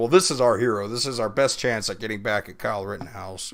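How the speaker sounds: plain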